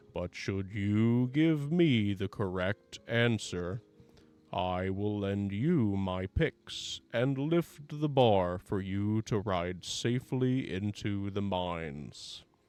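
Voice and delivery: rough golem monster voice. Voicing a tinsel golem who asks approaching players a question: gravelly Tinsel Golem voice. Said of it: "asking in a gravelly voice".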